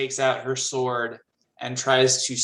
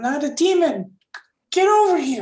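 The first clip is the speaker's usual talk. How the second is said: tiny, very high calling voice; 14 semitones higher, 5 dB louder than usual. Voicing a tiny figure calling the players over: small voice. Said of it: "you hear a small voice".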